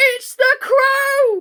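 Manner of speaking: very high, shrill cry of alarm. Narrator reads Tweedledum crying out as a dark cloud comes, shrill alarmed cry. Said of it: "cried out in a shrill voice of alarm".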